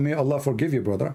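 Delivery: ordinary delivery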